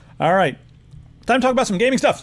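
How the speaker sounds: rattled off very fast and very high. Speaker moving on to gaming news, talking really fast. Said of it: "I'm talking really fast".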